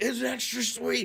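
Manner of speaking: mock, very high, shrill screaming. Retelling how Adam screams the line on air: imitating Adam screaming.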